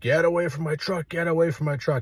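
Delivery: mild, mock irate man yelling. Retelling how a man walked at him: imitating a man yelling.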